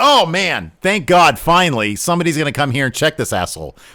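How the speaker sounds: mock toned-down scream, mild, relieved. Retelling a wrestler coming down to the ring, imitating own past screaming. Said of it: "and I'm screaming".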